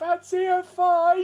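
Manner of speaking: very high, full, loud megaphone-style shout. Voicing the cleric yelling at the convoy: full megaphone voice. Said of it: "gone into full megaphone voice that's like".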